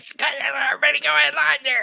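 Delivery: very high, strange, rough and creaky voice. Retelling a photographer's line at a church wedding: imitating a very strange voice. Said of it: "this photographer is doing a very strange voice".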